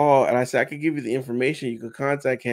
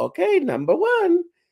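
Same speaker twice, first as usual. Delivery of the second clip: very high, squeaky cartoon Italian accent; 3 dB louder than usual. Retelling a photo op, counting off the photos, doing the Mario voice. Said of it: "he was doing the Mario voice like".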